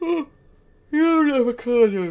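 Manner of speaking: loud, high words spoken through a yawn. A self-described bored gamer, short on sleep: yawning while talking. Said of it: "I'm sorry if I'm yawning".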